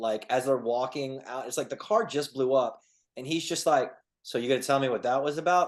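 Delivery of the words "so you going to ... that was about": play-acted, offhand, casual, unbothered, nonchalant tone. Retelling a movie scene right after a car blew up: imitating Brian, nonchalant. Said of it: "the way he said it that second time was so nonchalant".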